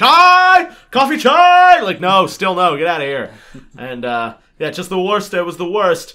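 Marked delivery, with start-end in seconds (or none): 0.0-1.8 very high, very loud, top-of-the-lungs screaming yell. Retelling train vendors selling chai and coffee in their faces: imitating vendors screaming. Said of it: "they'd just scream at the top of their lungs".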